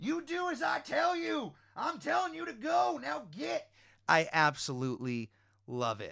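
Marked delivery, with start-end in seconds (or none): 0.0-3.7 shrill, high-pitched, bellowing truck driver voice. Retelling a trucker yelling at his tires: imitating a trucker yelling. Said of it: "a guy yelling at his tires".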